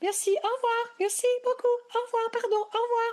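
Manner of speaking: voice jumping very high, polite tone. Demonstrating saying thanks and goodbye in a Geneva shop, voice goes up high. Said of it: "And my voice goes up there".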